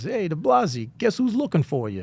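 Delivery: put-on animated New Jersey accent. Retell what Jim said to you in the hall early in your career, in Jim's New Jersey accent. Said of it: "in his New Jersey accent".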